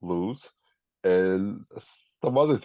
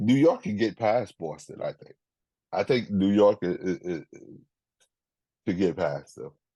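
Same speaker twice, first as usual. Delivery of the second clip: usual speaking voice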